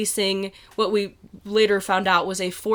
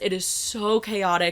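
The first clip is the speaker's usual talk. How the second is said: normal talking voice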